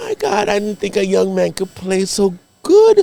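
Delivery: high, put-on Jamaican accent of an older woman. Retelling what an older party host said: imitating a Jamaican woman. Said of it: "Jamaican chick".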